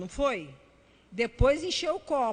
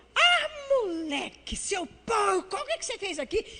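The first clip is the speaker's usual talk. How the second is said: put-on fed-up mother voice, high-pitched scolding yell; 7 semitones higher than usual. Retelling scolding her messy son: retelling a yell at her son. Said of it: "gritei com ele e falei assim".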